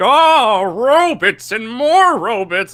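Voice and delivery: scornful, dismissive scoff, very high and loud. Explaining why he hates the Gandooms, doing an impression of Matt Burkett's impression. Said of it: "Is that your impression of".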